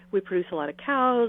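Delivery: plain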